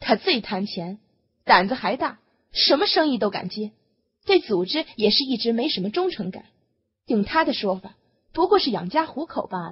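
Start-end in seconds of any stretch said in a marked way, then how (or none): none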